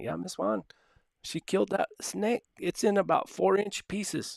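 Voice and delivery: put-on very high-pitched, thick, heavy Spanish accent. Retelling what her dad's worker Johnny told her, imitating Johnny's heavy Spanish accent. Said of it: "He had a real heavy Spanish accent".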